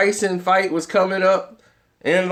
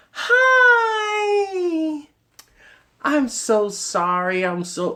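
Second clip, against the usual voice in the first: overly nice, very high, slow, sing-song, "hi" drawn out; 10 semitones higher than usual. Retelling an actress coming back to apologize: imitating Teri Hatcher speaking nicely. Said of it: "Then she comes back and nicely".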